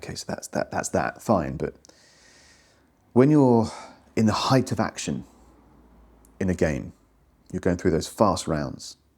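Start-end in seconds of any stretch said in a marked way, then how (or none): 0.0-1.6 put-on half-whisper, lower pitch. Describing a player helped by someone holding the rulebook, imitating someone half-whispering. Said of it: "they are like kind of whispering like".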